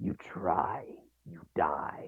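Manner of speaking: whispered, deep-chested, breathy dragon voice. Narrator voicing a character who is back in his dragon form, in a deep dragon voice. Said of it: "a deep voice, clearly back in his dragon form".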